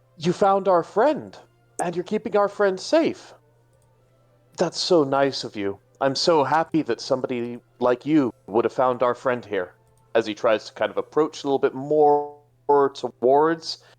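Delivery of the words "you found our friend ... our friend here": gentle, calm, soothing, slightly high voice. Jakob approaches the Galarian Rapidash that found their friend; calm, soothing voice. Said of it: "in a very calming, soothing voice".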